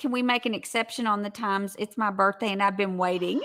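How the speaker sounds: plain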